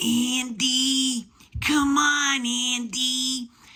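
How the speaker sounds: put-on very high, slow, drawn-out raspy kid voice. Describing a movie character's voice by quoting him, in a raspy little kid voice. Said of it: "He's got like this little raspy kid voice".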